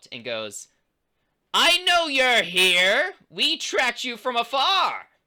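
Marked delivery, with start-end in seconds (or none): 1.5-5.0 very high, loud, drawn-out cartoon villain voice. Narrating a scene, voicing a woman who calls out at the tents, in a Skeletor voice. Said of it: "Why do you sound like Skeletor?".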